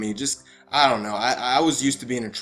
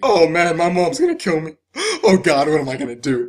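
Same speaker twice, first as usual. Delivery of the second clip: put-on crying, higher and louder; 5 semitones higher, 6 dB louder than usual. Retelling how a boy cried in front of his date, imitating someone crying. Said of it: "He cried in front of his date".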